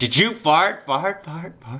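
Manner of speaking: high echo effect, fart repeated. Retelling how a friend's question echoed in a silent room: echoing voice imitating a friend. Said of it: "really what it sounded like was".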